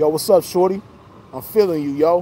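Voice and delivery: put-on New York accent. Acting out what a woman said when she came up to them, New York accent. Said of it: "with that New York accent".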